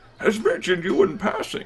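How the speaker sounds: put-on elderly man voice, pitched high. Voicing a character who addresses someone as Your Grace, old man voice. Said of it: "That's better".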